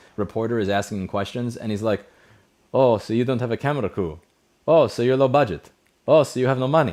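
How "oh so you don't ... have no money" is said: play-acted loud, fed-up, irritated needling. Retelling a tennis player snapping at a reporter's questions: mock-angry Djokovic impression. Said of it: "he's really pissed off at the".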